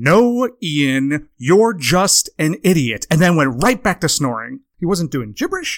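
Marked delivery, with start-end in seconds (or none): 0.0-3.1 put-on really angry voice, very slow. Retelling a friend's sleep talk, insulting the teller: imitating Pat's angry voice. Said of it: "his voice got really angry".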